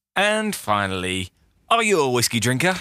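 polished on-air radio announcer delivery. Recalling asking someone a question, delivered in their best radio voice. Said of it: "in my best radio voice".

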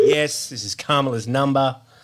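ordinary talk, nothing marked

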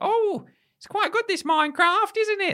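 high-pitched motherly voice. Describing a mum watching a TV show, imitating a mum. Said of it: "That's how she speaks".

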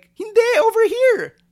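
shrill, very high, very loud put-on woman's voice. Retelling her reply about hosting WrestleMania, imitating how she talked. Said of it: "Why am I talking like her?".

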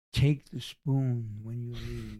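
whispered voice. Retelling what a girlfriend's mother said at dinner: imitating someone whispering. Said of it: "the mother whispers into my ear".

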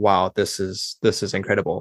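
ordinary delivery

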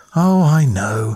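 spoken on a sigh. Narrator reads a reply to a girl who says she must leave, sighing. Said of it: "Ingram sighed".

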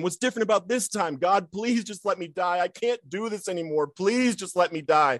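put-on, high-pitched, sobbing, desperate screaming. Retelling yelling at him while hitting the car's steering wheel, retelling screaming and yelling. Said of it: "I start screaming and I'm yelling".

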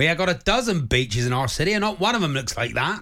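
put-on accent from Plymouth. Quoting what a man added, in a Plymouth accent. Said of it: "Is that a Plymouth accent?".

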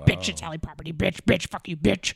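crude, rude, insulting voice. Retelling a viral video of a woman picking rhubarb: imitating the rhubarb woman's voice. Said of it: "she keeps starting her sentences with bitch".

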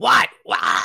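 raspy, hoarse, bird-like squawking "what". Imitating a woman who is always squawking at people: hoarse squawking voice. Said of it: "Like, hoarse voiced".

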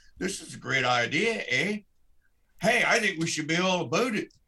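a little put-on Canadian accent. Voicing what people said about the idea: put-on Canadian accent. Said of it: "I'll try to talk a little Canadian".

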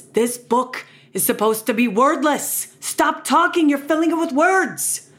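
put-on cranky New York accent. Reading a picture book aloud, doing one character's voice, in a grumpy new york accent. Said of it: "he has that accent ... a grumpy New Yorker".

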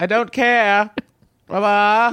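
very high, drawn-out put-on British accent. Voicing a caller's son talking to his mother: British accent. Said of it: "now he speaks with a British accent?".

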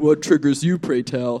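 put-on very deep voice. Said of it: "the deepest voice".

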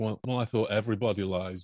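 normal talking voice

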